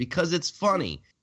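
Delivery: "funny" hit as if in all caps, high, wide.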